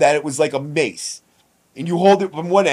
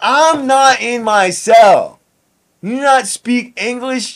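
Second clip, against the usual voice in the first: put-on words slurred together, pitched-up drunk talk; 8 semitones higher, 4 dB louder than usual. Retelling what he said while drunk in someone else's cell, mock-drunk slurring. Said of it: "Slurring my words all fucked up".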